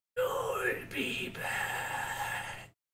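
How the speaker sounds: hoarse, raspy, hushed whisper. Voicing cursed armor that speaks to its owner: hoarse whisper. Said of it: "hoarse whisper saying".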